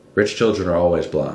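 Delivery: ordinary delivery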